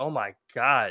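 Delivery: frantic, panicked, out-of-control cry. Retelling a frightened caller's reaction on a call: imitating a panicked caller. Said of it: "you just hear her going crazy".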